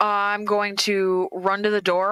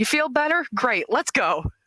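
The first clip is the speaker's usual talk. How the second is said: called out in a higher voice; 5 semitones higher than usual. Casting a healing spell, then calling to the healed ally: yelling in character. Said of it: "I'm gonna yell after the spell".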